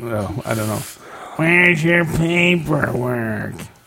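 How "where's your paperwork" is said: drawling, put-on raspy voice, slow, pitched up. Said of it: "That's actually right on for Ross".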